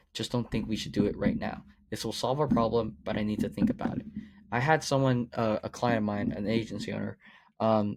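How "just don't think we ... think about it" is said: ordinary talk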